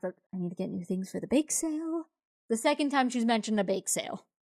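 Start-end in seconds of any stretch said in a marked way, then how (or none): 0.0-2.0 soft, quiet muttering under the breath. Voicing a woman in the story as she talks to herself, mumbling under her breath. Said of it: "she like mumbles under her breath".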